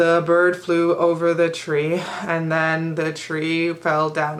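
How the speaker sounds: flat, slow, plodding monotone read-aloud drone. Mimicking how he read sentences aloud: flat monotone reading. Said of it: "when he would read in such a monotone way".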